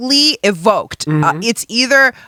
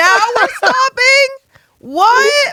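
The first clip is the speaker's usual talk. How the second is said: angry outburst, higher pitch. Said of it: "I was so mad".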